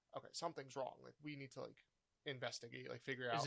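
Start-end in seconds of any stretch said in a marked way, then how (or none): none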